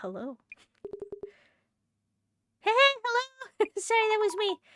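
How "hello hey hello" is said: startled, scared, much higher and slower. Greeting a village resident, scared into a high pitch: scared high-pitched greeting. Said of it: "I am scared the the high pitch out of my voice".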